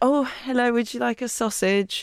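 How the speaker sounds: coy, flirtatious server voice. Retelling serving food at a stiff catering party: flirty waitress impression. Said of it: "That impression".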